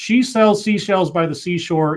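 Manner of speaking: ordinary talk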